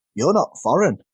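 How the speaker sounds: plain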